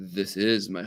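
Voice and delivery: deep, low, quiet voice, pitch dropped. At departures, speaker retells a man's answer to his question: imitating a deep voice. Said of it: "in a deep voice".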